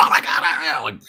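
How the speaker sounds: mock hysterical, breathy, panicked whisper. Retelling a dark, quiet night, the speaker acts out Kirsty suddenly freaking out: imitating Kirsty's hysterical panic. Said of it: "Like hysterically freaking out".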